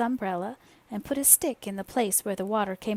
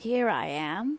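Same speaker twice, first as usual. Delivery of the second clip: growly, growling bear voice. Reading a story aloud, the narrator voices Pooh answering Christopher Robin, growly. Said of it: "said a growly voice behind him".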